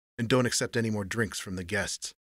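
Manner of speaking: plain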